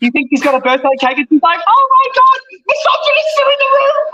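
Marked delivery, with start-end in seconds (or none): 1.7-4.2 giddy delight, voice pitched very high. Imitating Greta gushing that misogynists are in the room: mock giddy. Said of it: "where she gets all giddy and smiley".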